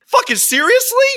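very high, loud, stunned, blurted outburst. Retelling a reaction at a dinner table: retelling saying it out loud. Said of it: "out loud I said".

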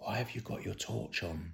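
put-on whisper. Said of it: ""Why are you whispering?"".

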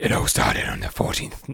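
deep, spooky storyteller-style creepy whisper. Starting to tell a story to a co-speaker, in a deep, creepy voice. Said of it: "Deep, creepy voice".

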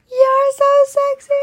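acted, very high squeal, screamed into the mic. Retelling what she said to him, re-enacting screaming it into the mic: retelling a scream. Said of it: "I screamed it into the mic and everything".

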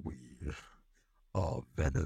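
put-on bad monster voice, breathy whisper. Trying out an impression for a listener, the speaker does a bad Venom voice.

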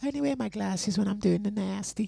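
very high-pitched, rough-edged, creaky voice. Imitating Drea again, saying when she wears glasses: Drea impression. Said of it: "when I do my Dre impersonation".

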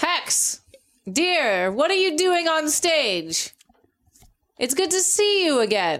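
high, very loud, full-volume yell. Calling out to hex on a chaotic stage, yelling very loud. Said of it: "I'm yelling very loud".

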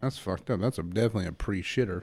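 ordinary delivery

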